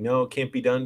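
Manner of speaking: ordinary delivery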